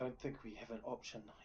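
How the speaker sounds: hushed, half-whispered aside under the breath. A character half-whispers to his order, half-whisper. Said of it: "he whispers to his order".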